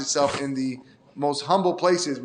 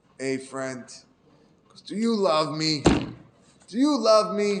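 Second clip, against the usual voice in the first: put-on boozed-up drunk voice; 3 semitones higher than usual. Retelling a villager turning to his friend while drinking, imitating a drunk voice. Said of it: "he says in a drunk voice".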